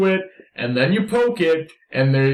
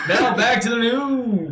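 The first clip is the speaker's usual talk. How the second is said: retro pitched-up eighties radio announcer, stretched news delivery; 8 semitones higher than usual. A player voicing their character in a tabletop game, eighties radio announcer voice. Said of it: "I'm trying to sound like an eighties radio announcer".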